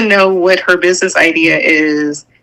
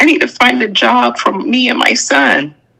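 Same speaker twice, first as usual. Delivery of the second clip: mock weepy, tearful, pleading crying voice; 5 semitones higher than usual. Retelling how someone pleaded for a job: imitating someone crying. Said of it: "showing up empty-handed, crying, saying".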